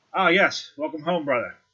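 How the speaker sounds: dwarf character voice. Voicing a studious dwarf clerk greeting a player's character: voicing a dwarf clerk. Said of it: "at Ogden and says".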